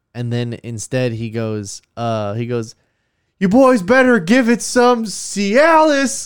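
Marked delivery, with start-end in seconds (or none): 1.9-6.2 put-on shout, much higher, slower. Speaker retells a man shouting at him and his brother; retelling a man's shout. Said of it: "like shouts that like that".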